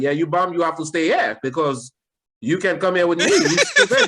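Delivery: put-on Haitian accent, high and sing-song. Speaker retells his wife telling him off, imitating wife's Haitian accent. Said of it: "a little bit of her accent came out".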